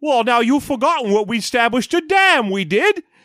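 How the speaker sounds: put-on British accent, r as w. Acting out a town magistrate in a movie: Jonathan Ross British accent. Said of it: "that Jonathan Ross British accent where he pronounces his W, all his R's as W's".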